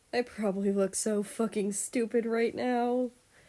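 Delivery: a bit irritated, still chuckling through it. Reading the carried prince's remark: a little annoyed yet laughing. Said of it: "a little pissed, yet still laughing".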